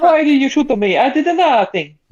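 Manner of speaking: put-on Italian accent. Joking that everybody should be shot with an Italian accent, in a mock Italian accent. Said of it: "shoot everybody with an Italian accent".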